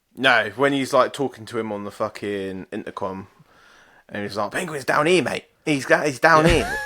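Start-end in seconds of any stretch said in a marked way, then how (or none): 4.5-6.8 Cockney accent, loud and pitched up. Acting out a butler on the intercom: Cockney Alfred voice. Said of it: "how good would it be to have a Cockney Alfred?".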